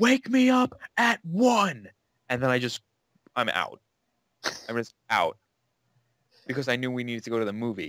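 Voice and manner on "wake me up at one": mock shrill, very high, long dragged-out yell. Retelling the last thing screamed at the woman following upstairs: retelling a scream. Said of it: "Last thing I remember screaming at her".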